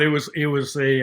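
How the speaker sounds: ordinary delivery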